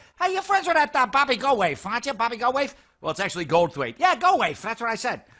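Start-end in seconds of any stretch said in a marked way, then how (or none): 0.2-2.7 mock Boston accent, much higher and louder. Telling how boston guys ask about his childhood friend, imitating a boston accent. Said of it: "as all the uh, the the uh, Boston guys pronounce it".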